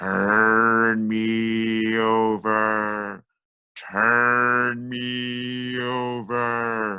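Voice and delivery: eerie, very slow spooky voice, "me" drawn out. A storyteller leads listeners in saying the story's refrain, spooky voice. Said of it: "It's the spooky voice".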